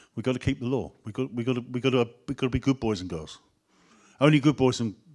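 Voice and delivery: ordinary talk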